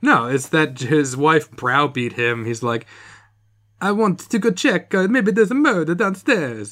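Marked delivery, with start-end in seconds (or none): 3.8-6.7 put-on Italian accent, pitched high. Retelling what a man told his browbeating wife, in an Italian accent. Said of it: "I'm better at doing Italian accents".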